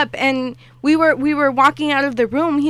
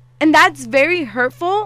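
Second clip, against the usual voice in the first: ordinary talk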